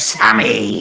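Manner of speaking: low, deep comic-book cartoon villain voice. Retelling a scene where the character leaps in the window: Remick as Green Goblin. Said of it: "this fucking, like, Green Goblin thing".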